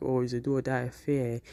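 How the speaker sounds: normal talking voice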